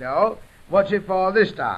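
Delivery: ordinary delivery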